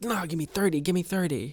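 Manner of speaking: mock-upset screaming. Recounting a man losing it while others watch, retelling his upset scream. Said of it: "he's like screaming and stuff".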